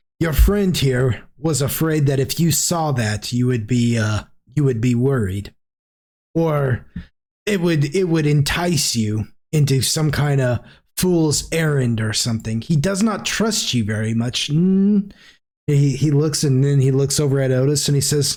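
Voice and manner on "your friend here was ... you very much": plain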